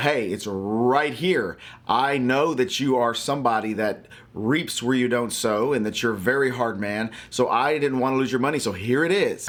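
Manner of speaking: ordinary talk, nothing marked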